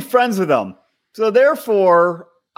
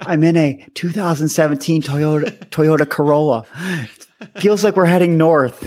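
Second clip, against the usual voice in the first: put-on hushed stage half-whisper; 3 semitones lower than usual. Joking about [name] podcasting from a car trunk: [name]'s put-on half-whisper voice. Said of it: "in like a whisper voice".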